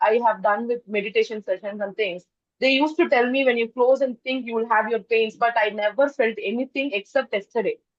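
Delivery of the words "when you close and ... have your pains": ordinary delivery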